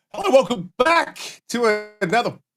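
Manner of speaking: voice breaking on the words. Opening a podcast episode, voice cracking. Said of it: "did my voice just break?".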